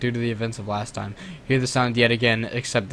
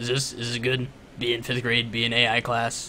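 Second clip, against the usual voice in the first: put-on character voice, slower; 4 dB quieter than usual. Trying out voices to read something aloud, doing a Gritty voice. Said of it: "This is Gritty".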